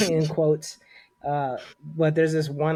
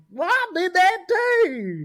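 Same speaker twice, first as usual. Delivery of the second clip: very high, cute, sing-song southern drawl; 4 dB louder than usual. Imitating how an elderly woman delivers a line, in a cute southern accent. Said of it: "that cute southern accent".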